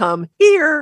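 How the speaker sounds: bright upward pitch kick on "here". Calling a dog with the command come here: happy pitch kick up on here. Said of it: "you can kick the second syllable up and make it sound happier".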